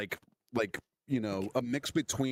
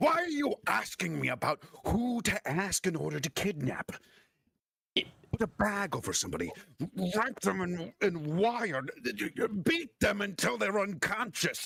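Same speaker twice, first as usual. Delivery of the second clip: demon voice shouting, higher pitched; 8 semitones higher than usual. Voicing a demon whipping around a character: demon yelling in your face. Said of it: "he's yelling in your face".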